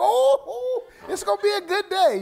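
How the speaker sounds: high, loud, fast, laughing, delighted blurt. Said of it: "He's like".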